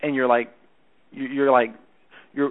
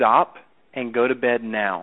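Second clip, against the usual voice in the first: mock authoritative, slow, firm, with pauses, falling on now; 3 semitones lower than usual. Repeating a mom's bedtime order: mock-authoritative, falling on now. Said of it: "You just said it like this. ... not only are there the pauses in there that are natural, but it's a down tone".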